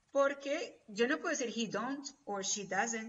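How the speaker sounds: plain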